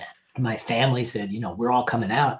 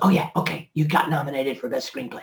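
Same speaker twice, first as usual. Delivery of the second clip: mock-whispered speech; 2 semitones higher than usual. Retelling a producer's 5 a.m. phone call, imitating him whispering. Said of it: "was whispering to me".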